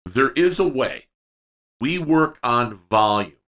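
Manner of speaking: very slow, deliberate, each word spaced out. Speaker asks everyone to listen and write this down, very slow. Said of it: "I'm going to say this very slow".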